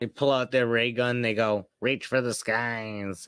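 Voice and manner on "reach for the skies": tiny, miniature alien space-creature voice. Imagining tiny aliens pulling out a ray gun, speaker does their line in a tiny alien voice. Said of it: "in their tiny alien voice".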